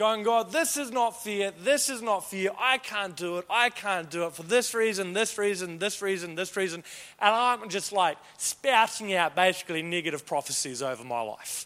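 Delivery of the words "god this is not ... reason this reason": plain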